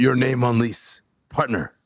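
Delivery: deep choppy staccato. A speaker demonstrates a line in a deeper, clipped staccato voice. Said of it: "It's just my voice a little deeper in the same staccato".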